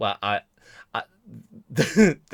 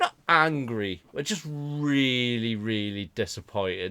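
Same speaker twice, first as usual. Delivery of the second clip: normal talking voice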